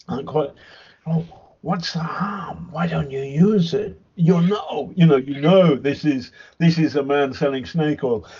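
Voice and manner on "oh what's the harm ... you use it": put-on creepy voice. Mocking a politician pushing a drug: imitating Trump's creepy voice. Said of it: "Trump says in that creepy voice".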